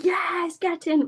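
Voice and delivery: mock loud screaming. Retelling celebrating a goal at home: imitating own loud scream. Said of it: "I screamed, like".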